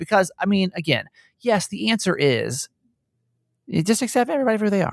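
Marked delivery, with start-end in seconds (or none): 3.7-4.9 high, fast, mock sweet saintly tone. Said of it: "Don't give me just the typical Nancy Yancey, love everybody answer".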